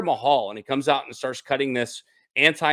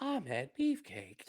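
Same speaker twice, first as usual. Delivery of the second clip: very quiet, hushed digital assistant voice; 15 dB quieter than usual. Suggesting how to say a name, in a Siri voice. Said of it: "or like the like the Google Siri voice".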